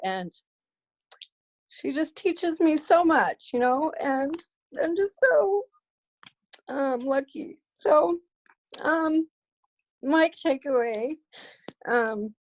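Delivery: choked-up, tearful speech, voice breaking. Speaking about her best friend, coach and mentor, crying. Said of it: "I'm not sure why I'm crying".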